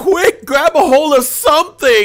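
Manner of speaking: put-on panicked voice. Retelling a game where the ship alarm sounded: imitating panicked friend. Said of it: "like, freaking out".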